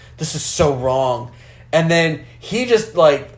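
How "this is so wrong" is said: put-on muttering under the breath. Retelling what a woman said as the guys carried her to the car, muttering under breath. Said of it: "just talks under her breath".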